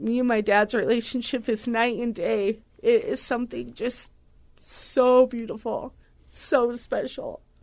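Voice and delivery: tearful, crying while talking. Describing the relationship with dad, crying while talking. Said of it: "I said I wasn't gonna cry".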